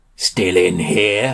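growled, beastly, wolf-like voice. A Fluffy Sun Wolf opens the larder door where captives are held, growling. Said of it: "it growled".

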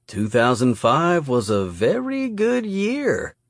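slow drawl with stretched-out vowels. Narrator reading his own line to Patterson, in a drawl. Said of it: "I drawled".

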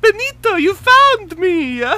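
very high, loud, fake Italian accent. Recapping a story, the speaker quotes Maria greeting Benito in Maria's fake accent. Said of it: "her accent seems fake and offensive".

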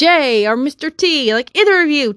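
slow, aggressive, worn-out, insistent delivery. Addressing Mr. J and Mr. T after a crappy day: aggressive. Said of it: "I'm sorry if I sound really aggressive right now".

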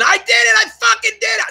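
acted, very high, joyful delighted shriek. Recounting the moment it finally worked, the speaker is retelling own excited scream.

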